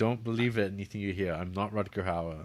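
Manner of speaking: put-on, acted villain voice. Describing a film role, imitating David Warner's character. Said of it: "except he's like".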